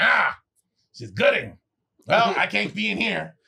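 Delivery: put-on raspy voice. Retelling what a judging teacher said on walking in: imitating a raspy-voiced teacher. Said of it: "she had a little raspy voice".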